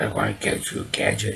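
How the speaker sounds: hushed, breathy whispered villain voice. Recalling a character who is only heard, never seen, in a Doctor Claw voice. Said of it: "And that's how his voice was".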